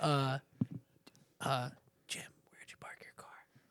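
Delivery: very soft, hushed, barely voiced whisper. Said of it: "the infuriating one is the whisper".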